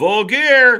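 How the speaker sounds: booming, full-volume, very loud high yell. Speaker calls out an announcement to listeners, yelling. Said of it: "I don't know why I had to yell that".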